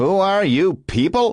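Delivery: acted-out snotty sneer, pitched very high. Narrating an old man mockingly repeating another man's question, snotty, mocking repeat. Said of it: "making it sound as if it had been said in a snotty way".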